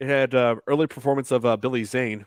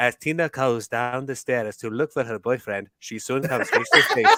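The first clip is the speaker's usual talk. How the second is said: put-on French accent in documentary narrator style. Showing the voice used narrating The Return of the Living Dead, in French narrator voice. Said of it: "that voice. The French narrator".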